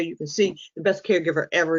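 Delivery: plain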